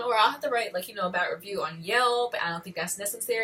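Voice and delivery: ordinary talk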